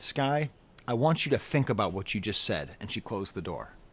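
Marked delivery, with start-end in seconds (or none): 0.0-2.7 strict, severe voice. Retelling what she said to him at ten years old, imitating a very stern voice. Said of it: "with a very stern voice".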